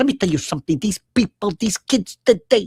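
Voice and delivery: voice of a veteran Italian-American stand-up comic. Retelling a typical Pat Cooper bit: Pat Cooper voice. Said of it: "he goes".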